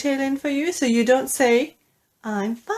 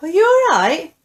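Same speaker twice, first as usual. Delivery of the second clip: rising, question-like upward tune on alright; 5 semitones higher, 7 dB louder than usual. Intonation lesson on the greeting are you alright: rise on alright. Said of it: "The intonation goes up. The sound goes up".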